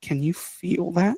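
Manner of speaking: hushed, soft half-whisper under the breath. Retelling asking a partner while cruising up a draw: retelling a half-whisper. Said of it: "whisper to him".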